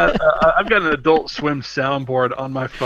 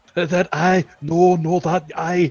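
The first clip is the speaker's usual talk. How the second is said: put-on thick Scottish accent, higher pitch; 3 semitones higher than usual. Imitating a pasta instructor from the videos: imitating thick Scottish accent. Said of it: "this thick Scottish accent".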